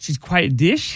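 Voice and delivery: rising intonation at the end. Coached by the others to say a phrase, he tries it out: rising question intonation. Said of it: "he says it with a question mark".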